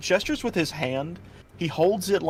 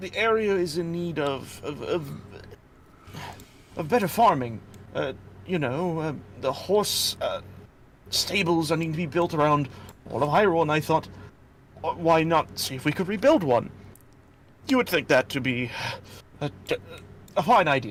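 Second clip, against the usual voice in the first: flustered, out of breath, stammering. A hylian man just arrived on the road, flustered and stammering. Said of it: "You see a Hylian male walking up the road. / He tries to stand himself up, and he kind of like pats himself off a bit. Kind of attempts to dress himself a little better to adjust himself, while leanin".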